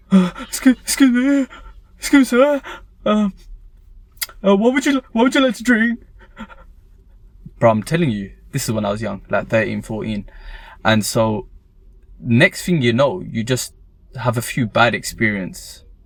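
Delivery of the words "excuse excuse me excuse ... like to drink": mock very high, halting, jittery, nervous stammering. Retelling a first time taking orders at a restaurant: imitating own nervous past self. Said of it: "you're so nervous".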